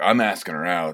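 ordinary talk, nothing marked

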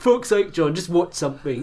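mock, very loud, high-pitched, angry ranting outburst. Retelling a voice message someone sent him, imitating an angry voice message. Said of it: "this really angry voice message".

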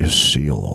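put-on dramatic delivery. Retelling a cousin revealing what's in the jar: imitating dramatic delivery. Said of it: "he's all dramatic about it".

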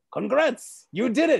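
raspy, high cartoon voice, pushed. Reading a script aloud, voicing Mojo's line: Mojo Jojo voice. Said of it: "so I'm gonna do that voice".

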